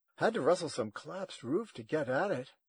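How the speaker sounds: ordinary delivery, nothing marked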